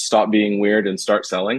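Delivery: ordinary delivery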